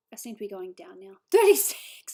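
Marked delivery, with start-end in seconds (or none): 1.3-2.1 laughing mid-sentence, higher and louder.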